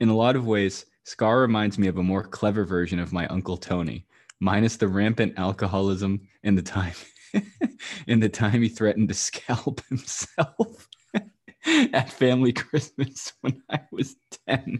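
slow delivery, fighting laughter. Reading a friend's funny tweet aloud, laughing while reading. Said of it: "I don't know if I can read this without laughing".

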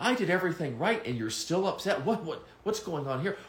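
upset, high-pitched objecting tone.

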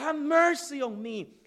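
very high, shrill, loud repeated screaming. Retelling how the man kept begging despite being told to shut up, imitating someone screaming. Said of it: "But he kept screaming".

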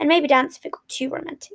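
ordinary delivery

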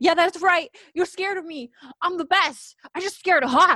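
very high, boastful, proud yelling. Describing him out of his panic and into a regular fight, retelling a yell. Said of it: "he's yelling like".

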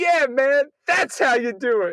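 high, loud call-out. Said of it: "another guy who just goes".

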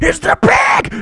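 sudden, shrill, very high, loud scream. Retelling being woken by someone screaming two feet away; retelling a scream. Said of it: "and like screaming".

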